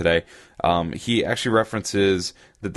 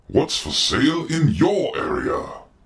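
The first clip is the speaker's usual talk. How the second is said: fake British accent, higher pitch; 10 semitones higher than usual. Announcing the name of a returning segment: bad British accent. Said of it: "with a bad British accent".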